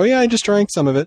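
very high, breezy, offhand, nonchalant tone. Acting out a person's reply within an analogy, retelling it quasi nonchalantly. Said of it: "Harry saying quasi nonchalantly".

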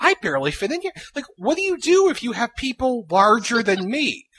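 cramped, squeezed, breathless, barely breathing voice. Retelling someone shoved into a tiny MRI: imitating someone who can barely breathe. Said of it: "talking like this 'cause she can barely breathe".

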